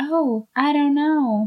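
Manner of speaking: slow, drawn-out Southern American drawl. Retelling Winifred's answer when questioned, Winifred in a Southern accent. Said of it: "I don't know why I'm doing a southern accent".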